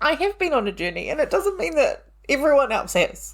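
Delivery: choking up, voice very high and tearful. Talking about her own journey, choking up, near tears. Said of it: "oh my God, I'm going to cry".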